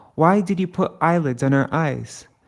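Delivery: ordinary talk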